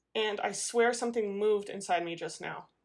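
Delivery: ordinary delivery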